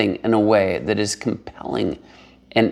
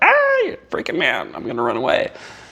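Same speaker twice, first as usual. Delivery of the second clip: swooping, sing-song, animated horse voice; 2 semitones higher than usual. Acting out how a horse reacts to someone approaching: voicing a horse. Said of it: "That horse is like".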